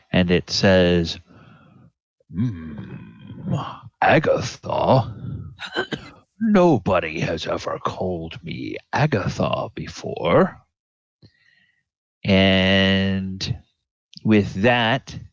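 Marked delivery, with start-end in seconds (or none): 2.3-10.6 unexpectedly deep, swooping creature voice. Voicing an unseen creature answering from a tower: rather deep voice. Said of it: "a rather deeper voice than you would necessarily have expected".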